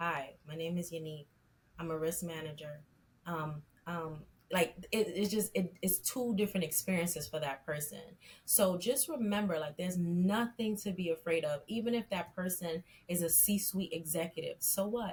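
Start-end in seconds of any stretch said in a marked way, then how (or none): 0.0-2.8 flat, dull, enthusiasm-free monotone. Giving interview advice, demonstrating a candidate's introduction in a monotone. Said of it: "versus the monotone".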